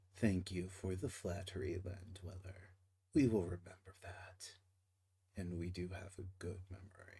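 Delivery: very quiet, low, hushed, faintly menacing tone. Voicing an orca matron thanking a land dweller for flattery, slightly threatening. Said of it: "she even said that in a slightly threatening way".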